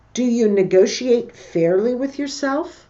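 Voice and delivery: pitch rises upward on yourself. Giving examples of questions where intonation goes up, rising pitch at question end. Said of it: "Goes up".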